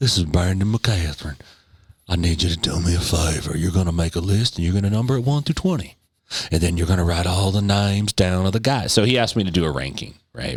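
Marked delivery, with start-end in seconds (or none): 0.0-8.9 seductive, put-on Southern drawl. Retelling a request from Brandon: Bill Clinton-esque voice. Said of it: "in his Bill Clinton-esque voice".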